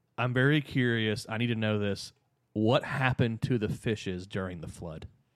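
mock dead-serious delivery. Retelling what Alex asked him, imitating Alex's dead seriousness. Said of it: "and dead seriousness goes".

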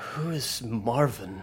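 drowsy, groggy, half-awake voice. A player's character reads an uncrumpled note aloud, kind of groggily. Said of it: "she kind of groggily".

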